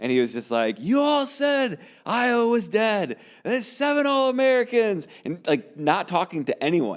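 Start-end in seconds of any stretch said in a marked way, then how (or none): 0.8-5.1 put-on very high street-preacher ranting yell. Retelling what a street preacher shouted at people walking by: imitating a preacher yelling. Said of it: "just yelling Iowa propaganda".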